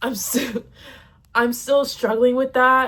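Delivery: crying, tearful speech through tears. Speaker talking through a painful past, crying like an idiot. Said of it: "because I'm crying like an idiot".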